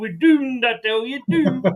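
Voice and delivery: Scottish accent. Asked by another speaker to say it in a Scottish accent, Scottish-accent Dad's Army catchphrase. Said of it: "For those of a certain age that remember Dad's Army".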